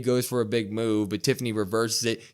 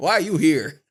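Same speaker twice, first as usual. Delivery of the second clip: put-on screaming; 6 semitones higher, 6 dB louder than usual. Recapping a wrestling match, voicing a wrestler yelling at her unwanted helper, retelling a scream. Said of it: "She's screaming at her".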